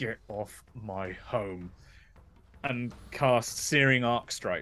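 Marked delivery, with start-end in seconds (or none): 0.0-1.7 through gritted teeth, much lower, quieter. Speaking as a character during a tabletop game, through gritted teeth. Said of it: "through gritted teeth be like".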